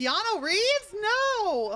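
over-the-top dismay, very high and very loud. Reacting to hearing that Keanu Reeves is dead, with exaggerated dramatic dismay. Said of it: "I was being dramatic for the sake of it".

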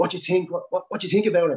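mock bubbling, worked-up, eager excited tone. Recounting his reaction after the speaker's Alouette flight, imitating him all excited. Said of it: "he was all excited and he was going".

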